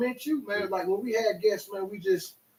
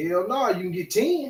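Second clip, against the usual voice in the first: ordinary talk, nothing marked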